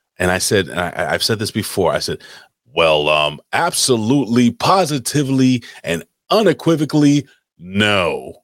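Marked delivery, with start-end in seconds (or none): 2.7-8.2 very slow announcer voice, drawn-out no. Retelling an answer to a counter worker: retelling a deep announcer voice. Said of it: "I put mad bass in my voice and I did the announcer guy thing".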